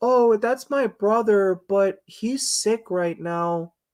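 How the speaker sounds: put-on high slow little kid voice. Showing how the voice sounds, higher-pitched Georgie voice. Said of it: "it's me, but a higher pitch".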